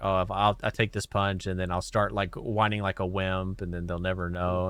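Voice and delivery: ordinary talk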